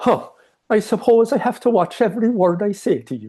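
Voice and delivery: put-on Irish accent, very high pitch. Retelling an argument, the speaker quotes a woman's response, imitating an irish accent. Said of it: "I will use her accent".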